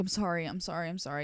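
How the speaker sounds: put-on crying voice, tearful, words repeated over and over. Retelling apologizing profusely to a woman over the speaker's hair, retelling a crying apology. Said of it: "I'm crying".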